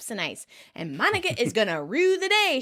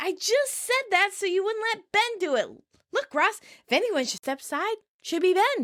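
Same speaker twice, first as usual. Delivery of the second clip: mad, worked-up, angry, high-pitched outburst; 7 semitones higher than usual. Retelling a TV scene where Joey argues with Ross: imitating mad Joey. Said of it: "Joey's mad".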